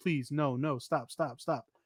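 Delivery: play-acted, begging plea with repeated stops. Acting out a cornered man with his hands up, imitating someone pleading. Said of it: "he's pleading like".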